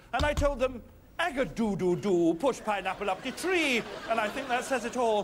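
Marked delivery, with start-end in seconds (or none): 1.2-3.8 slight, put-on touch of Jamaican accent. Host recounting his advice to the star guests, in a little jamaican accent. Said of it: "do a little Jamaican accent".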